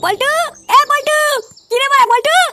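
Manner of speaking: shouting. A character calls out to another man, who asks why he is shouting, yelling. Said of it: "তুই এত চিল্লাচ্ছিস কেন?".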